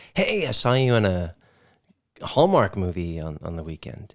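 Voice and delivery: plain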